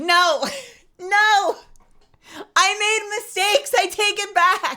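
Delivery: very high, drawn-out, frantic, panicked pleading voice. Acting out a victim torn apart in a game: mock panicked begging. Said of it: "You're like".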